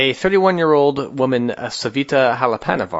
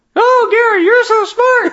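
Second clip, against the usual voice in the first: sock puppet voice, higher and louder; 6 dB louder than usual. Pretending to talk through a sock puppet while alone: sock puppet voice. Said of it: "little sock puppets and be like".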